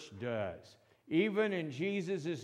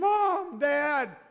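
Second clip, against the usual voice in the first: high, loud, panicked scream. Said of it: "The kids are screaming".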